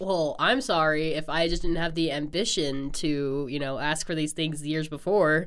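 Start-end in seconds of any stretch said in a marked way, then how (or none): none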